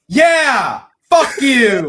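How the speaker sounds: loud, very high hollering cry. Calling out at a creature to grab attention: calling out loudly. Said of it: "Marisol's mom calls out".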